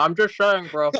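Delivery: talking with mouth full. Arguing that dark chocolate is healthier, talking with mouth full. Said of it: "As his mouth is full".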